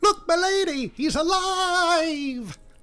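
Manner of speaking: put-on very high, shrill, stretched-out shriek. A startled woman sees Henry's hand fall and cries to her lady: screaming. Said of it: "she screams and says".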